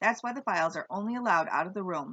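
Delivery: ordinary delivery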